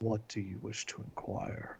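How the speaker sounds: hushed, deep, otherworldly angelic whispered voice. A narrator voices an angelic being addressing the group, in a deep voice. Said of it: "says in a deep voice".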